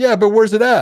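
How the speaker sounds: loud, high, frustrated yelling.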